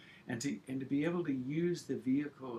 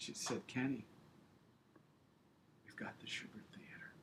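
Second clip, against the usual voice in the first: moved, emotional, quieter voice; 9 dB quieter than usual. Recalling the phone call about getting the theater, emotional. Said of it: "I just get emotional thinking about it".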